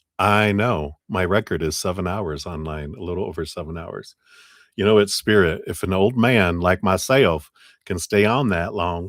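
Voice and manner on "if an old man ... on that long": put-on Southern US accent. Joking about staying online for seven hours: put-on southern accent. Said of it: "that's my Southern accent".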